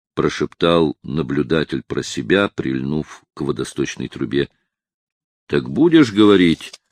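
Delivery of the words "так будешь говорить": shouting at point-blank range, right into ear. A policeman to a watchman hanging upside down: shouting into his ear. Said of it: "закричал полицейский прямо в ухо".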